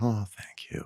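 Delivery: light, airy, breathy, gentle, soft high voice. Show how Connie, Don's wife whom you interviewed, talked, in Connie's very gentle, high voice. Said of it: "high voice".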